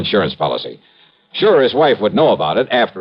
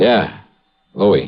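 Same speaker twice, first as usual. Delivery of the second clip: hushed, voice kept down. Calling a woman on the phone and confirming who he is, hushed voice. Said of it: "Why are you talking like that?".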